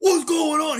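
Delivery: alarmed, bewildered freak-out. Retelling a confused reaction to the onside kick: imitating Pete Golding freaking out. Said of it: "He's freaking out".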